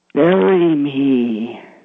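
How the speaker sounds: put-on scary voice. Retelling what a figure in the window said to Gary, in a really scary voice. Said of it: "In a really scary voice".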